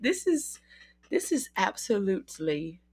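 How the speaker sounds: British accent suddenly slipping out. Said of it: "don't mind my random British accent".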